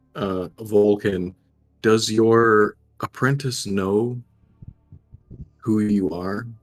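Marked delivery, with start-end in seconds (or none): 1.9-6.5 softly spoken, quiet voice. As a game character leaning in to another character, quietly asking. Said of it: "lean in and quietly ask".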